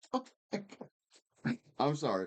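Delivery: high-pitched words breaking through hard laughter. Describing a movie scene, the speaker cracks up: laughing hard while talking. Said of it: "why I'm laughing so hard right now".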